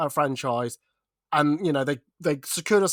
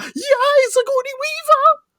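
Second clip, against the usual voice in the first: mock excited fangirl voice, higher and louder; 6 dB louder than usual. Acting out how another speaker might react to an announcement: put-on excited fan voice. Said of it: "I don't know why I put that voice on".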